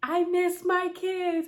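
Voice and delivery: tearful, weepy, high, drawn-out, near bawling. Retelling waking up from surgery and talking to a nurse: imitating own bawling. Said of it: "And I start bawling".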